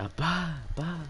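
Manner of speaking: put-on high, scared child's calling voice.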